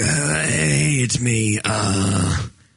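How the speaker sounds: slow, drawn-out, rough, fake sickly croak. Showing how to leave a voicemail without saying who you are: fake sick voice. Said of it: "do it like you're sick".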